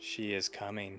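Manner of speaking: monotone unison voices. Narrator voices several figures answering in unison, in a monotone chorus voice. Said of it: "Like five different voices, monotone".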